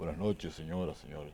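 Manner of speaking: put-on starchy, stiff, affected old-time radio announcer voice. Recalling how radio voices used to sound: stiff, affected radio voice. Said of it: "la voz de radio era acartonada, impostada".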